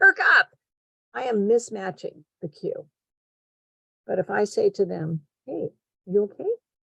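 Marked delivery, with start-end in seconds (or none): 5.5-6.5 gentle, low-key, quiet and soft voice. Showing how to greet someone who looks sad, spoken quietly. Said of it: "Similar quiet".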